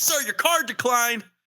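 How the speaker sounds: play-acted, very high, carrying, yelled call-out. Retelling how a store clerk announced a declined card: imitating a clerk yelling. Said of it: "why would you yell that your card declined?".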